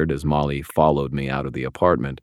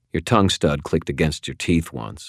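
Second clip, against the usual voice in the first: ordinary delivery, nothing marked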